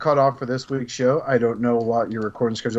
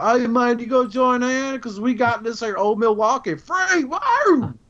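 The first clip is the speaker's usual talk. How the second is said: put-on high, whooping drunk-man voice; 11 semitones higher than usual. Telling another speaker he sounds like a drunk neighbor, imitating a drunk guy. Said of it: "You sound like the guy that's drunk".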